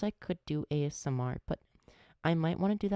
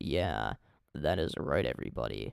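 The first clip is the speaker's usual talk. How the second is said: very low, bass-heavy put-on deep voice; 14 semitones lower than usual. Showing the viewers another voice they can do: put-on deep voice. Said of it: "Or I could do a deep voice".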